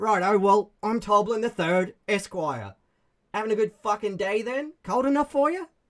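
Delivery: put-on goblin voice. Player voicing a goblin who looks the party up and down, Toblin goblin voice. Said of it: "this goblin looks you up and down, and he's like".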